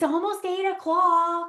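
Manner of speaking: acted, loud, high-pitched hollered yell. Retelling what someone yelled from the top of the stairs: imitating Neil yelling. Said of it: "he yells from the top of the stairs".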